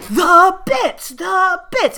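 very high, shrill, loud, furious, demanding shriek. Retelling a man demanding bits at a counter, imitating someone screaming. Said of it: "He just starts screaming at him".

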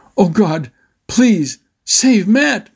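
high, drawn-out, pleading cry, calling out. As a crocodile races toward his little brother, [name] calls out to God: calling out. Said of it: "[name] called out".

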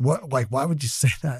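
soft, grossed-out, disgusted tone. Speaker retells a man's reaction to their remark, mock disgust. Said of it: "in disgust".

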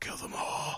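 hushed, whispered, put-on demon voice. Describing a scene where he puts his headphones on, demon voice. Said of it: "we get demon voice of like".

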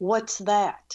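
ordinary talk

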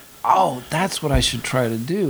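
ordinary delivery

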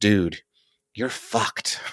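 acted-out whisper. Retelling how a kid by the roadside leaned close: imitating a whisper. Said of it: "he whispers".

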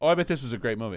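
fast, facetious delivery.

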